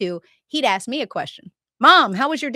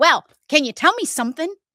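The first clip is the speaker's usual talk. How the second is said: mock exasperated, frustrated, pitched-up voice; 5 semitones higher than usual. Describing parents questioning their child, the speaker acts out the parent, imitating a frustrated parent. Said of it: "You're frustrated now".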